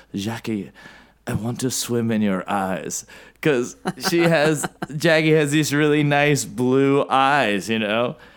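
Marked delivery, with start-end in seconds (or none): 0.1-3.0 put-on feminine French accent. Retelling a Zoom call, quoting Natasha speaking to Jackie in Natasha's French accent. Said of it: "she said it with her French accent".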